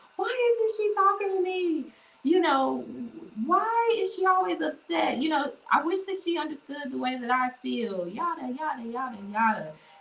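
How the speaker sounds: exasperated, frustrated rant, high-pitched. Acting out a frustrated person throwing things in their room: acting out a frustrated person, pitch raised. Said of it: "the octave in my voice went up".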